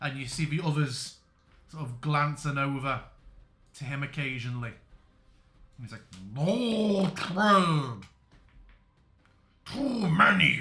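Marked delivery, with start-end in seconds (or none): 6.4-10.6 very slow, loud, gurgling watery creature voice. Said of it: "calling out in these watery garbles".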